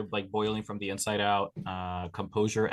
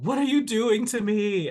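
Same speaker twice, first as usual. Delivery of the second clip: high-pitched, loud, horrified scream. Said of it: "scream at her".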